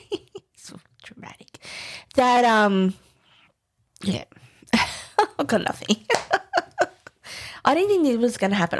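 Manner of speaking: choked up, fighting tears, barely holding together. Recalling certain things that happened on a trip to japan, trying not to cry. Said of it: "I'm trying not to cry".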